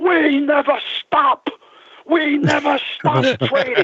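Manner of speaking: acted, shrill, very high-pitched, furious screaming. Retelling what the trader at home screamed, retelling a scream. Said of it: "he's screaming".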